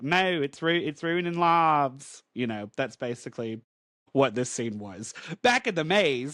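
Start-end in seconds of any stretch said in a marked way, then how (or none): 0.0-2.2 put-on drawling Louisiana accent. Recapping a comic scene, quoting Rogue's reply: Rogue voice, Louisiana-like accent. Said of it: "Is is that your Louisiana accent?".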